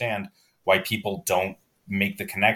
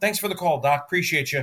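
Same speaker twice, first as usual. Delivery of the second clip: phone voice lifted into a higher register; 9 semitones higher, 3 dB louder than usual. Retelling how he answers the phone as Bruce Wayne, in a higher register. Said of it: "He finds a higher register".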